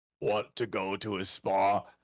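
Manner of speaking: low, flat, toneless monotone with no inflection. Describing a comic panel, voicing the father on the phone in a flat monotone. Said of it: "I can almost hear him in the monotone".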